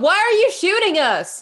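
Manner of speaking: very high shout, directed upward. Calling up to attackers who are shooting at the party: yelling up. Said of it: "And I just yell up".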